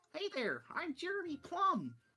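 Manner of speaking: very high, swooping, sing-song pixie voice. Narrating a pixie who flies up to greet Abigail, in a pixie voice. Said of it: "a pixie uh, flies up to you".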